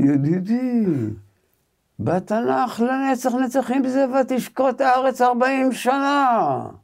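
very high, cutting, sarcastic tone. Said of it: "שהיה בו סרקזם וידע לתקוע".

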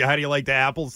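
ordinary talk

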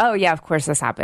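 plain

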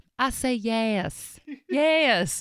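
yes said in a put-on American South accent. Answering a question about being proposed to at Red Lobster, southern accent. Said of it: "with a southern accent".

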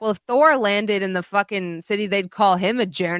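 plain

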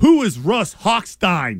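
slow, deliberate, each word weighed. Retelling a disrespectful on-air question, imitating Warren Sapp. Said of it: "I'm gonna say it the way he said it".

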